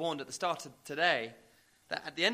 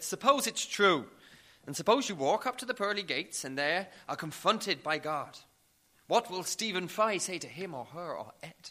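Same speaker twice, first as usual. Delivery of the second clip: put-on Irish-accented TV presenter interviewer voice; 3 semitones higher, 4 dB louder than usual. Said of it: "That's my Irish accent for you".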